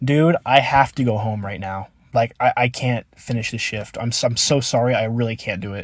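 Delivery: acted-out tearful sobbing voice. Retelling begging the crew lead to leave mid-shift, retelling a sobbing plea. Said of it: "he sees me fucking sobbing".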